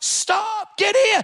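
put-on high, commanding, shouted yell. Retelling how his wife chased a guy down an alleyway, imitating someone yelling. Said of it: "She's yelling at this guy".

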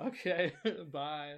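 laughing, baffled okay bye. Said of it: "And I was like".

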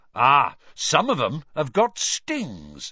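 enthusiastic, eager, swooping and drawn out. Hagrid answers Lavender Brown's question, enthusiastically. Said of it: "said Hagrid enthusiastically".

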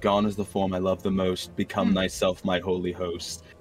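low murmured mutter under the breath. A player voices his character's incantation while casting a spell, muttered under his breath. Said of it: "under his breath, you hear him say".

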